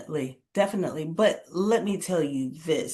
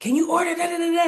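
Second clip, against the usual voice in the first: put-on, really amped-up, keyed-up, high voice; 12 semitones higher, 5 dB louder than usual. Retelling a call from a man with screaming in the background, imitating an amped-up caller. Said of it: "his voice was really like amped up".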